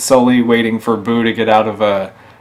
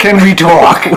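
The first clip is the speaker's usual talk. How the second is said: loud, pitched-up, fun, belted comic voice; 8 semitones higher, 7 dB louder than usual. Repeating the catchphrase back: Joan Rivers voice. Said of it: "it's a fun voice to do".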